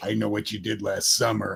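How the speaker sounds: low, quiet, menacing villain voice. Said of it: "he will go".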